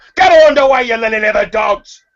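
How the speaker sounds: very high, loud, bellowed shout. Storyteller voicing a man who slammed his cabin door behind him: shouting from inside a cabin. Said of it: "You hear his voice from inside the cabin shout".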